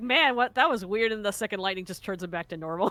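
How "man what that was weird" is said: puzzled, bewildered, baffled tone. Suggesting how the NPC reacts to the first lightning: imitating his confused reaction. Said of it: "he's just like".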